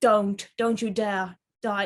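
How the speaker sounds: mock commanding, acted-out authoritative tone. Retelling a show scene where John tells a shot friend not to die, imitating a commanding voice. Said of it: "he was in a commanding voice".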